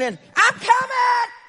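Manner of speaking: play-acted defiant cry, high ringing scream. Speaker retelling David's reply to Goliath's challenge, retelling a scream. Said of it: "David just screamed out".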